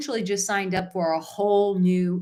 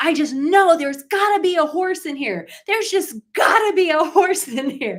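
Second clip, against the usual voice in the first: put-on child-like scream, higher and louder; 9 semitones higher, 6 dB louder than usual. Retelling a story of a kid digging through manure: imitating a kid screaming. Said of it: "he starts screaming".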